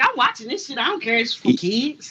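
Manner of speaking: normal talking voice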